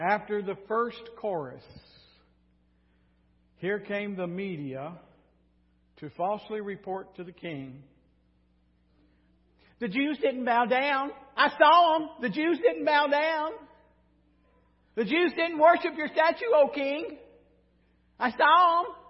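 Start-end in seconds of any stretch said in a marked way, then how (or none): 9.8-18.9 high, loud sarcastic tone. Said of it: "Can you tell I'm being a little sarcastic".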